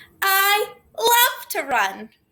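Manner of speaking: very high, swooping, thrilled, excited exclamation. Demonstrating an exclamation sentence to learners, very excited. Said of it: "Do you notice how excited I said that?".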